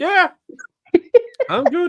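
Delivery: voice jumped very high, loud. Answering someone asking about their stomach after a toast, voice a notch higher. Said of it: "Sound like your voice went up too a".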